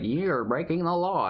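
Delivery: high automated robot voice. Describing a scam phone call, imitating its robot voice. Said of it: "in a robot voice".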